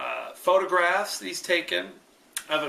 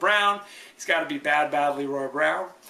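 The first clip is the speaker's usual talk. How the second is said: normal talking voice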